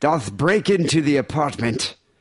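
put-on old English theatrical voice. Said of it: "Shakespearean version".

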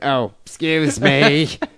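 put-on drunken nasal English accent. Joking about faking an english accent while drunk: drunken nasally english accent. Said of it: "drunken, nasally [name]".

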